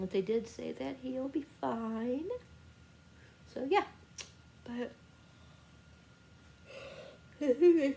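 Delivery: sleepy, tired voice with yawning. Wrapping up with listeners before going to sleep, yawning and sleepy. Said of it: "I'm just yawning".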